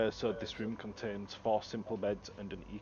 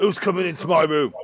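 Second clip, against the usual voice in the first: angry shout, very loud and high; 8 semitones higher, 19 dB louder than usual. A game master voices someone behind a door a player opens: angry voice. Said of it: "you hear an angry voice".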